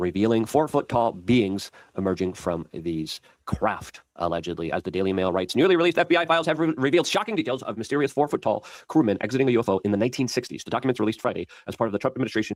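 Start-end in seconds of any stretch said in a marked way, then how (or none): 4.7-12.6 rushed, rapid, rattling newsreader-style reading. Speaker reads a news article aloud to listeners: speaking too fast. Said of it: "he speaks too fast".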